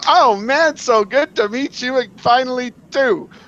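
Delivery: put-on polite, high, drawn-out, friendly tone. Retelling greeting a stranger at a convention: imitating a smiling greeting. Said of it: "You smile and you go".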